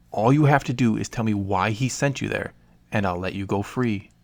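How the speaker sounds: ordinary delivery, nothing marked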